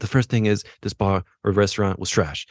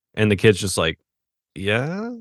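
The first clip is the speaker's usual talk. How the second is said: usual speaking voice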